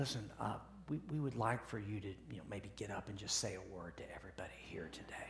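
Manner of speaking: soft, hushed whisper. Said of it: "whisper in your ear and go".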